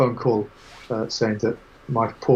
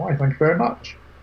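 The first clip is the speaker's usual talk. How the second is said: put-on polite English accent; 6 semitones higher than usual. Retelling how a woman answered a compliment on her accent, in an english accent. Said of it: "she replied in an English accent".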